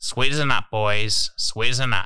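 canned promo delivery, like a talking beer bottle. Recalling a beer promotion's talking stubby holder: Shane Warne impression. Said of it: "Shane Warne's voice comes out and it's like".

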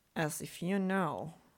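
ordinary delivery

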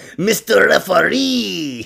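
failed put-on German accent drifting into French. A speaker attempts a german accent that keeps coming out french: failed german accent. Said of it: "I try to do German and there's French".

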